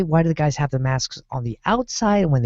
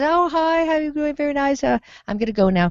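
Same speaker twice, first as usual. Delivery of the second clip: put-on very high, genteel, polite British accent; 11 semitones higher than usual. Retelling a man's words as he opens the car door, imitating polite british voice. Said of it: "Very British, polite".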